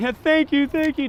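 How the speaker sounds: mock tearful crying voice. A man retells a driver who stopped to thank him, imitating a woman weeping. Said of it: "weeping and crying, like".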